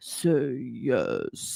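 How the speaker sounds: very low, swooping, sleazy coaxing purr. Imitating a character asking Moira to say yes: imitating a voice getting really low. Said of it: "it's getting real low".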